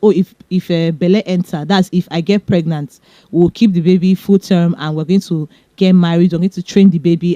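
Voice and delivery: ordinary talk, nothing marked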